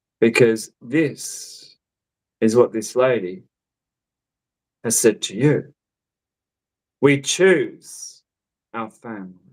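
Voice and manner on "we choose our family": very stern, firm, firmly laid-down words. Relaying what a lady has said to the listener: very stern. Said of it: "I want to say it very sternly".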